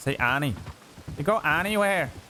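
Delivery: accent from Northern Ireland. Speaker demonstrates the northern variant for another speaker: Northern Irish accent. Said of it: "Northern's a bit more like that".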